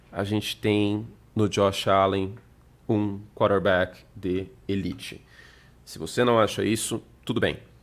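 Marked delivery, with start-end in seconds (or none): 0.2-5.3 measured, unhurried, slow, with deliberate pauses between words. Stating a point he calls controversial, slow with deliberate pauses. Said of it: "eu vou falar pausadamente".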